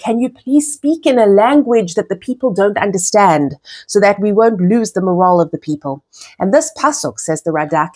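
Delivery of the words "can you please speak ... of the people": usual speaking voice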